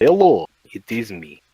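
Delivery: cheesy, corny, laid-on Russian accent. Explaining why they enjoy doing character voices, demonstrating Mishka in a cheesy Russian accent. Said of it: "in a cheesy Russian accent".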